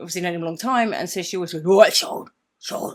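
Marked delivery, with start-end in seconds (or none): 1.6-2.9 booming, very loud, really gruff man's voice. Retelling how a friend greets Sean: imitating Sean's gruff voice. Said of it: "'cause he talks like that".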